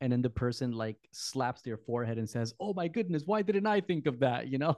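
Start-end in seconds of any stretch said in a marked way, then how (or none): 2.6-4.5 openly sarcastic, pitched-up outburst. Imitating someone answering advice to stop being anxious: imitating a sarcastic reply. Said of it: "it's sarcastic".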